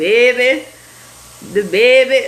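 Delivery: put-on New Orleans accent. Speaker tries to say it the way the listeners do, imitating New Orleans accent. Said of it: "That's exactly how y'all say it".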